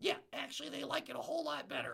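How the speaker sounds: very high, swooping, rough, creaky puppet character voice. Podcast host voicing his puppet Gus: Gus puppet voice. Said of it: "you know I just changed my voice".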